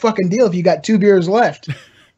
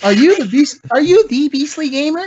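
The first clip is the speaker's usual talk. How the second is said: put-on squeaky kid voice, much higher; 8 semitones higher than usual. Retelling a 12-year-old heard during a Call of Duty Ghosts match, squeaky kid voice. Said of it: "My voice was really squeaky back then".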